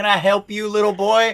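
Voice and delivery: put-on southern accent, pitched high. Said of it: "The southern accents".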